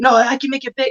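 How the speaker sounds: put-on light, little Spanish accent. Retelling what a woman said when told it wouldn't fit, in her little Spanish accent. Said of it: "in her little Spanish accent".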